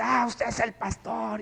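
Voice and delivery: accusing, mild half-yell. Retelling how a man stood over them and began: imitating a man yelling. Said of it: "y empieza a gritar".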